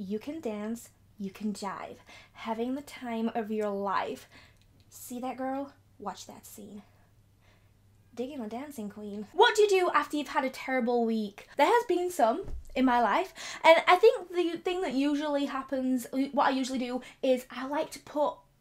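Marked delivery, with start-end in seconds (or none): 0.0-9.3 attempted American accent. Answering a viewer's request to imitate an accent: attempted american accent. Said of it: "Could you imitate the American accent?".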